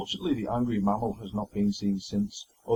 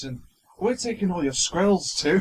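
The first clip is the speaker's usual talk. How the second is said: put-on Scottish accent, pitched up; 9 semitones higher, 4 dB louder than usual. Joking that the squirrels ended up in Scotland: Billy Connolly accent. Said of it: "my attempt at a Billy Connolly sort of accent".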